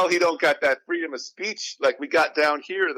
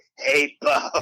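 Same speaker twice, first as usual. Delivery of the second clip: yelled-out, hoarse character voice. Speaker mocks how Wolverine sounds on the show; Wolverine voice, hoarse from yelling. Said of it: "Like he's been yelling at a concert for five hours straight".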